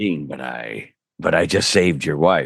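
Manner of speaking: very low, slow voice with words drawn out. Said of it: "I just played Cass and Dean".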